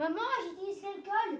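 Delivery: high called-out voice, projected far.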